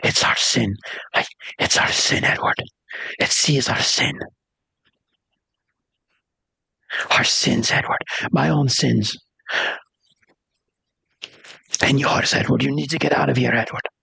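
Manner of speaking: hushed, close-up whisper right against the ear. Acting out a character who pulls someone very close and speaks, whispering. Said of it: "and he whispers. He's like".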